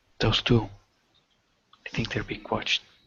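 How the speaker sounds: hushed, under-the-breath whisper. Player in a tabletop game speaking to the group, whispered. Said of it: "I whisper this".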